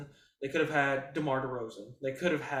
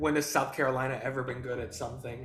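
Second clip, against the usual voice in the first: usual speaking voice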